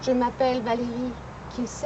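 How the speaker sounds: halting delivery broken up with pauses.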